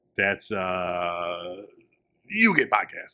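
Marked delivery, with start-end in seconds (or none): 2.3-3.2 voice like a computer assistant, machine-like. Showing what you get when you type in GNW, as an AI impression. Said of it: "This is my A I".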